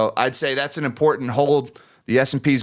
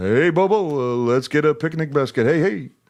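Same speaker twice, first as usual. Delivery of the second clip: animated cartoon bear character voice. Podcast host reads out a listener's greeting, Yogi Bear voice. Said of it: "in my uh, Yogi Bear voice".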